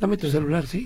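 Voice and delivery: soft, low, hushed undertone. Acting out a robber on a bus demanding a phone, low hushed voice. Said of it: "así bajita".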